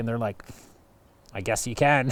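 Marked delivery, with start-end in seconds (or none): 1.3-2.1 put-on grudging tone through gritted teeth. Retelling how the national parks answered reluctantly: imitating a reply through gritted teeth. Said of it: "Through gritted teeth".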